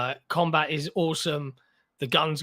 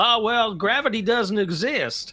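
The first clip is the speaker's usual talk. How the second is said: put-on, pitched-up southern American accent; 6 semitones higher, 4 dB louder than usual. Describing a game character's banter, quoting him in a southern-sounding American accent. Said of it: "played by a southern uh sounding American accent".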